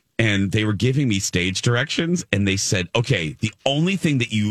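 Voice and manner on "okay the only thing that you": normal talking voice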